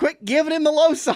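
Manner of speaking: very high screaming call. Retelling shouting advice from the booth during restarts: imitating own screaming. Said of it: "kept screaming".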